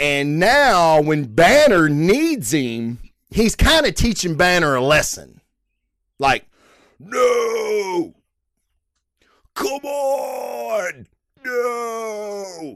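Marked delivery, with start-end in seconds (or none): 7.0-12.8 very slow, hushed voice, the word no stretched out. Describing Banner needing the Hulk, then doing a Hulk transformation impersonation. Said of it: "That's my Hulk transformation impersonation".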